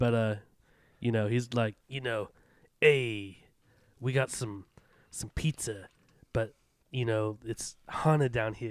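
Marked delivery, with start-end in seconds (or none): 2.8-8.7 thick, hardcore, put-on New York accent. Imitating a man in the Midwest, in a hardcore New York accent. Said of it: "he has a total hardcore New York accent".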